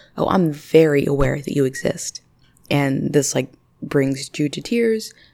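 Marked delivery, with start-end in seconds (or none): 0.2-2.2 put-on short, very terse, curt delivery. Retelling how a girl's mother answered her, imitating a terse tone. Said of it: "Just like a very terse tone".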